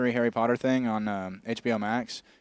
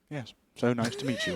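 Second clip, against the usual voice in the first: soft, put-on old man's voice; 5 dB quieter than usual.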